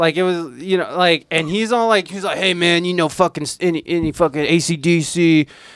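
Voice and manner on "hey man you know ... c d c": put-on drunken man voice. Retelling how an already drunk comedian asked for songs: imitating a drunk man. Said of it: "he was already drunk".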